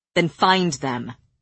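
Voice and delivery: ordinary delivery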